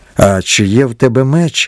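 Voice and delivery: plain reading voice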